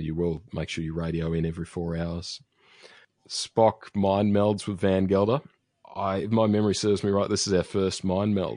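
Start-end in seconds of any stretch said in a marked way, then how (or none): none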